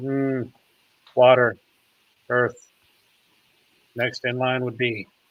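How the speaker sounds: hushed, close, half-whispered delivery. Game master voicing a character who half-whispers a hint to another, half-whispering. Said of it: "he whispers to him".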